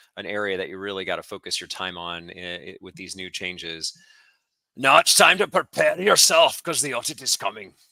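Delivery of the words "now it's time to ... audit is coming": cheesy, exaggerated fake Irish accent, loud and high. Slipping into a voice in the middle of an explanation: really cheesy Irish accent. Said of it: "that's my really cheesy Irish accent".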